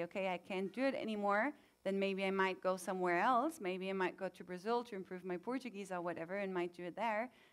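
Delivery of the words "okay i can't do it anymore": usual speaking voice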